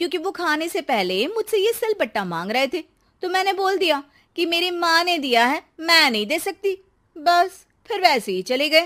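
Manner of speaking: crafty, sly tone.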